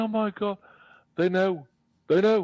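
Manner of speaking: very high, loud, sobbing woman's crying voice. Retelling how the lady's voice reacted: imitating a crying AI voice. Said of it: "the lady's voice started crying".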